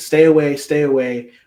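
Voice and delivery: play-acted desperate, loud, frightened pleading. Telling a story about a crying boy behind a tree; retelling a boy's plea for life. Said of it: "started pleading for his life".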